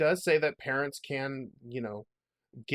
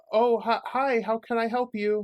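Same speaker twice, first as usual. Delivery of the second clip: very high, jittery, nervous voice; 9 semitones higher, 6 dB louder than usual. Retelling a teen girl at the cash register greeting a customer, imitating a nervous girl. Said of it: "tell she's a little nervous".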